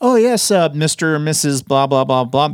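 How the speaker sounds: polished, professional speaking tone. Explaining how they speak to clients instead of lecturing: professional voice for clients. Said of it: "I don't talk like this".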